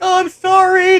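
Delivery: very high, very loud, shrill falling-apart breakdown. Retelling a restaurant scene from a show, doing Kitty having a mock breakdown. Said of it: "she has a fucking mental breakdown".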